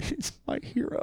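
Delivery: high, soft, whispered crying. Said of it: "me crying softly inside going".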